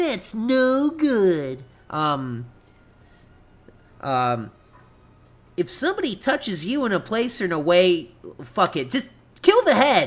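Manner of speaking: animated, swooping sing-song, pitch swinging all over. Performing a line after being asked for it: Sonic Says impression. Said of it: "Do impression of Sonic said?".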